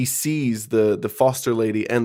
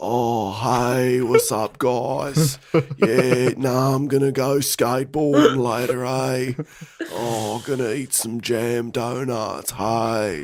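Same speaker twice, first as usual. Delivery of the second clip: put-on laid-back skater-dude voice. Imitating the other brother's voice, imitating George as skater dude. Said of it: "he sounds like he's always skateboarding. He goes".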